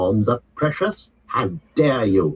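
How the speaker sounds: stern, severe, commanding voice. Reading the story, Frodo draws himself up and rebukes Smeagol, stern. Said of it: "his stern voice".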